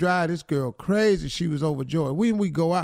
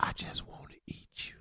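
hushed, soft, breathy whisper. Retelling what he said after sex in bed, imitating a whisper. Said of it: "Then he whispered".

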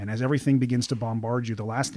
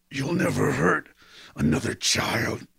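spitting, rough, furious, raging grunt; 3 semitones higher, 3 dB louder than usual. Narrator voicing a man choking a bearded man: grunting with rage. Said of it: "he grunts, spitting with rage".

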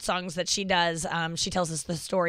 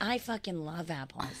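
mock-drunk voice, quieter; 9 dB quieter than usual. Joining the conversation, the speaker does an impression of their drunk mom. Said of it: "I'm gonna do my drunk mom".

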